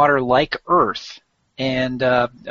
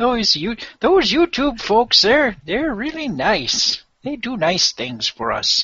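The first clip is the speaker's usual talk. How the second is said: put-on old man voice, much higher pitch; 8 semitones higher than usual. Praising youtube for archiving the show's video, in an old man voice. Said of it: "break out the old man voice".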